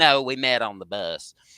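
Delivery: put-on Texan accent. Retelling Texan travelers' reply to a question, in a Texas accent. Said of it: "I love your Texas accent".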